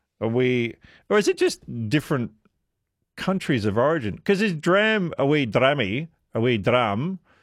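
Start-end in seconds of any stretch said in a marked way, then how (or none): 4.4-7.2 put-on light, half-hearted, vague Scottish accent. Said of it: "my vague attempt of doing a Scottish accent".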